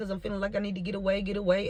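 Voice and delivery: rattled off at top speed, rushed.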